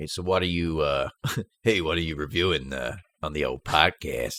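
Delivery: slow, put-on American accent. Retelling a colleague's question about the podcast: put-on American accent. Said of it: "he's American, so he said".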